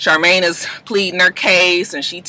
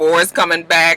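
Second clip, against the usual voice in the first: plain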